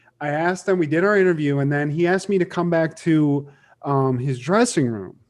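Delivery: ordinary talk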